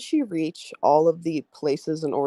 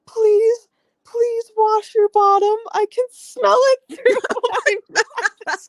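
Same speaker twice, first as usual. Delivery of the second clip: put-on crying voice, pleading, higher and louder; 7 dB louder than usual. Retelling a video of a woman begging others to wash: imitating a woman crying. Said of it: "a woman crying with her hand over her mouth".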